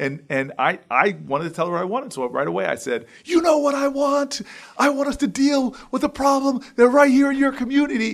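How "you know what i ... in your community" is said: very high, heated, outraged yell. Retelling answering a woman at her door: retelling yelling back. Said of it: "I started yelling back at her".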